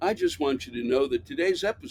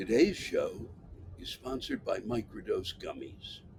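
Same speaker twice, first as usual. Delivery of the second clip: put-on radio-ad announcer voice; 7 semitones lower, 9 dB quieter than usual. Announcing the sponsor of the show: put-on advertising voice. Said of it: "I never use that voice".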